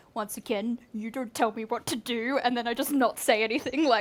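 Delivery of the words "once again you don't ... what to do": soft mutter under the breath. Describing what they say under their breath so only he hears; retold under-breath mutter. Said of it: "I say under my breath".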